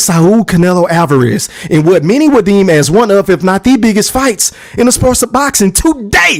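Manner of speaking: ordinary talk, nothing marked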